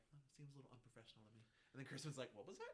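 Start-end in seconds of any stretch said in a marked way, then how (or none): 0.1-1.4 imitated muttering under breath, quieter. Retelling an awkward table conversation, one man remarks: retelling a mutter under breath. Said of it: "under his breath is like".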